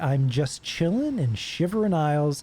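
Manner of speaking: usual speaking voice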